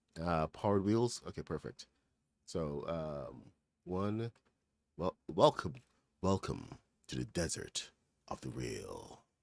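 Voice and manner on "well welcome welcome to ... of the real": deep, low, rough, swooping film voice. Try out your best take on the character from The Matrix, a Morpheus impersonation. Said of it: "That's my best Morpheus, Morpheus impersonation there".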